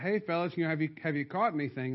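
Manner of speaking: usual speaking voice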